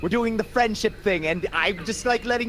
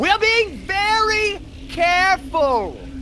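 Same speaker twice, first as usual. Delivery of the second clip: very high-pitched, loud half-yelling voice; 11 semitones higher, 5 dB louder than usual. Speaking in character to someone who is deaf, half shouting. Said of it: "I like half shouting".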